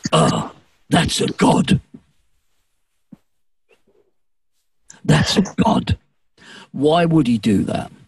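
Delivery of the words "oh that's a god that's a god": very low, slow, grunting caveman voice. Retelling a man pointing at the person on stage, in his ugh voice. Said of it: "in his ugh voice".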